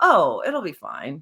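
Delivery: slow, mock casual, unbothered, nonchalant brush-off tone. Retelling a partner brushing off worry about snow: imitating Seth's nonchalant reply. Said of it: "he was so nonchalant".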